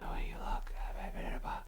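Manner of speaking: put-on whisper. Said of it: "every word they said was whispered".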